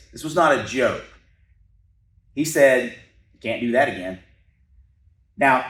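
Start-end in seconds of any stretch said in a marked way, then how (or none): none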